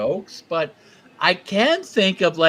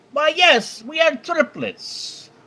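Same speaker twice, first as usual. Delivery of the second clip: bad put-on Irish accent, pitched very high; 10 semitones higher than usual. Telling a bar joke, the triplets ordering: bad irish accent. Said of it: "dish out an Irish accent, which will, will be bad".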